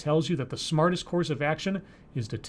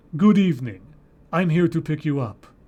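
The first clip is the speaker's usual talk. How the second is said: deep, emotionless, raised voice; 5 dB louder than usual. Narrating a story, voice the predator's greeting in a deep, emotionless voice. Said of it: "A deep, emotionless voice".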